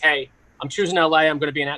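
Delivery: ordinary talk, nothing marked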